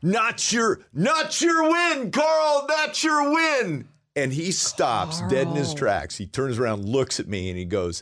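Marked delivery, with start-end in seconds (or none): 0.0-3.9 very high, loud, stretched-out yell. Heckling a player walking off the court, retelling his own yelling. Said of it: "and I'm yelling".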